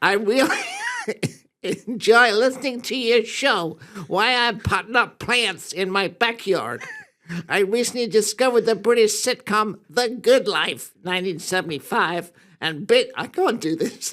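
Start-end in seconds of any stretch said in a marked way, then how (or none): 0.0-13.1 fake New York accent, higher pitch. Reading a listener's letter aloud after being asked: put-on New York accent. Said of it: "go New York".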